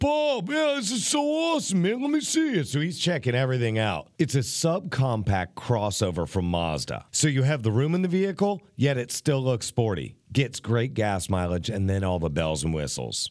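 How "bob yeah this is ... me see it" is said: put-on New Jersey accent, pitched very high. Retelling his car-guy father-in-law checking out his new Mazda, New Jersey accent. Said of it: "in his Jersey accent".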